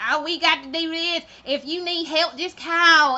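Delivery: high, sugary, fake Southern accent. Imitating a woman whose accent the speaker mocks, fake southern accent. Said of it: "that chick with the fake ass southern accent".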